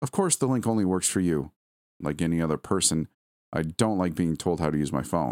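ordinary delivery

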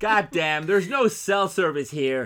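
very loud, high-pitched put-on American accent. A speaker quotes lines from a movie to a listener, in an American accent. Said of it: "Why are you coming out with all these American accents?".

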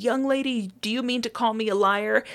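mock stern doctor voice. Retelling how a doctor answered a patient: imitating a doctor raising his voice. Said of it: "he just raises his voice and he says".

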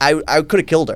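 normal talking voice

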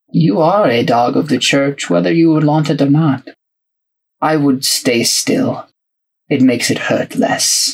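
restrained, reserved, level delivery. Game master voicing a priest addressing a blind player character, quiet, reserved priest. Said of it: "and he has like spectacles. And he seems like to be a very like kind of quiet, reserved sort of person".

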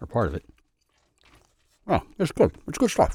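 mouth-full speech, slightly high-pitched. Eating an apple fritter while talking, speaking with his mouth full. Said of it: "talk the whole time with apple fritter in my mouth".

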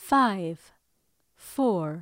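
robotic, mechanical female computer voice. Speakers take turns voicing a loudspeaker countdown, woman's computer voice. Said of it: "Let's hear your woman's computer voice".

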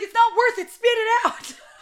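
loud, high-pitched yelling.

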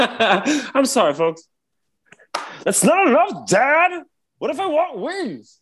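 very high, friendly comic voice. You act out a bit as if in Step Brothers, talking to Dad, in a John C. Reilly impression. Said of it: "I've never heard your John C. Reilly before".

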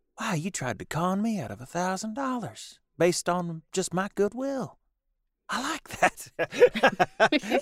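very high, slow, sassy, drawn-out Southern drawl. Retelling a TV episode, quoting the waitress: sassy Southern waitress from The Simpsons. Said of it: "the old sassy Southern waitress".

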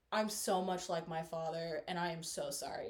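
put-on weepy voice, words spoken through tears. Retelling how she apologized one day, imitating someone crying. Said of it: "crying and was like".

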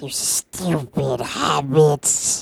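put-on storybook fantasy creature voice. On a show about impressions, a guest takes a turn doing a Gollum impression. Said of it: "I'll do mine".

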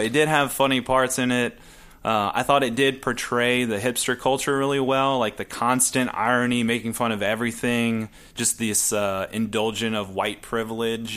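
normal talking voice

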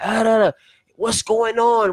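put-on yelling. Retelling how a visitor to the company greets everyone: imitating someone yelling. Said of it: "he comes and he yells".

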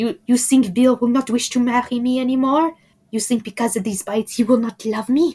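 put-on English spoken in a French accent. Reading a book aloud, the speaker voices Fleur's lines, French Fleur impression. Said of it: "I like your French Fleur impression".

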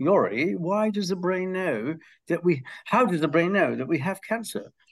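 put-on cute, high-pitched British accent with a youthful sound. Retelling a student's question during class: imitating Laura Marlowe's British accent. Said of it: "in her cute British accent".

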